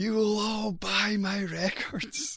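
put-on full-lunged, top-of-voice shout, pitched very high. Recalling standing up among mates at a loud night, retelling a top-of-voice shout. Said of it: "at the top of my voice, I would shout".

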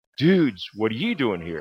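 toned-down, mild, restrained exclaimed yell. Retelling how a doctor posed with hands on hips: imitating a man screaming. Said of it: "and he screamed".

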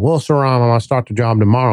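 put-on mumble, as if mouth full of marbles. A boss retelling his employee announcing a new job, imitating Josh's mumbly speech. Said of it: "talked like he had a mouthful of marbles".

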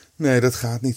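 with a sigh. [name], whose cap will not fit on Kees's head, answers with a sigh. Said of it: "zuchtte [name]".

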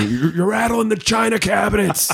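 mock, very high, rising yelled scream. Recalling a dad upstairs yelling over turntable practice, imitating dad screaming. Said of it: "Had my dad upstairs screaming".

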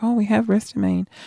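soft, quiet, softly spoken pharmacist voice. Retelling what the chemist said: imitating a softly spoken woman. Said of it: "she speaks so softly".

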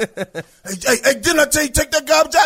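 play-acted high-pitched, loud fatherly dad hollering. Acting out a father yelling at his son about the garbage: acted dad yelling at son. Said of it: "who the fuck you yelling at".

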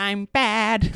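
very high-pitched villain voice, at top of range. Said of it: "fantastic, um, impression of her".

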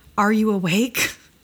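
wavering, tremulous voice with definite tremble. From his tent, the narrator's buddy asks if he is awake: hushed, trembling voice. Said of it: "spoke a bit hushed and with a definite tremble in his voice".

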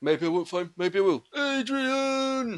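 slightly thickened, very high voice in a slow drawl. Showing how a Stallone impression sounds: Sylvester Stallone impression. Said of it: "say Adrian in a slightly thicker voice".

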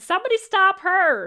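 all-out shrill yell at full volume. Voicing a Dragonborn woman calling for help: yelling as loud as possible. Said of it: "she yells out as loud as she can".

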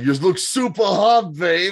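put-on flirty Bronx accent. Recapping a film's premiere scene, doing S'more Money's Bronx accent. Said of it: "I love that he's got a Bronx accent".

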